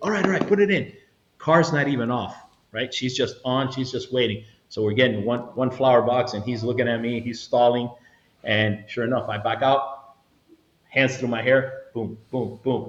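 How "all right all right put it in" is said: frantic, flustered, high, panicked freaking-out voice. Retelling a nervous driver agreeing: imitating a panicked woman. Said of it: "freaking out".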